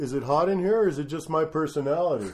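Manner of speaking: put-on New York accent. Retelling a comedian's joke from the stage, Mike Long New York accent. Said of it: "He says in a New York accent".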